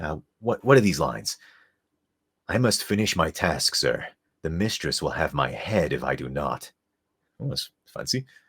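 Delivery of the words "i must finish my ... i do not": rasping from the throat. Reading the character Wise's lines: throaty rasp as Wise. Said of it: "Wise voice".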